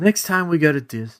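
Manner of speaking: put-on serious tone. Retelling what a five-year-old son said, imitating the son being serious. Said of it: "he gets all serious".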